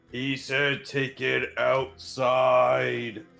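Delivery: biggest, boomiest, rough voice, "outside" stretched. Playing an air elemental in a game, in a booming voice. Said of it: "in the boomiest voice I can".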